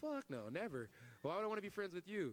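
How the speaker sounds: acted, laughing, dismissive voice. Retelling a confrontation, the speaker repeats his own reply to a man offering friendship, laughing. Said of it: "I started laughing".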